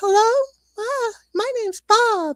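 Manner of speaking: very high fake little-boy voice, like a dubbed kid. Mocking bad horror-film dubbing, the speaker does a woman dubbing Bob's boy voice. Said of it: "an older woman voice a young boy".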